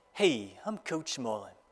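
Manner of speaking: put-on low, thick, heavy New York accent. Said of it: "in this thick, heavy New York accent".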